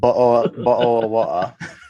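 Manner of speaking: mock British accent while laughing.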